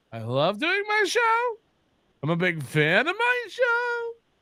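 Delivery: questioning upspeak, every line ending rising. Imitating another speaker's line as if asking: imitating a questioning tone. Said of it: "He's asking us".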